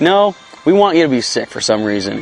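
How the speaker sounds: ordinary talk, nothing marked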